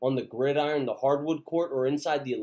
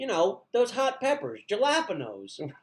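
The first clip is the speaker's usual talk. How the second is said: animated, pitched-up, swooping, casual sing-song voice; 9 semitones higher than usual. Retelling a food order, imitating Jim. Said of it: "He's like".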